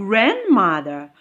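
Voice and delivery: stress on the word "grand". Teaching word stress in compound nouns, stress on GRAND. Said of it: "the stress falls on the first syllable".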